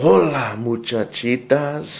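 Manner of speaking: barely-there, very soft, hushed voice. Narrator voicing Skippy John Jones greeting everyone, very soft voice. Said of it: "he said in his muy, muy soft voice".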